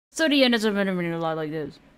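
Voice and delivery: fast, rushed, mumbled, unenunciated speech. Mocking a narration's delivery: imitating fast unenunciated talking. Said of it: "He talks too fast without enunciating his words".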